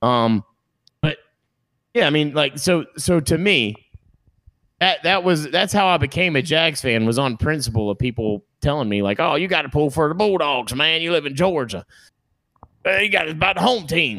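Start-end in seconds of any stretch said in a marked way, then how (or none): 9.2-14.2 put-on Southern accent, higher, faster. Recalling people telling him to back the bulldogs, mocking a south georgia accent. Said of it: "Why do I know for a fact the accent you're using?".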